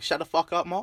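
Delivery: bad put-on Australian accent. Talking to mark, the speaker repeats the phrase in a bad australian accent. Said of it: "our shitty Aussie accents".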